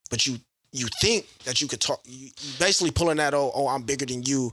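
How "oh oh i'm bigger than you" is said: usual speaking voice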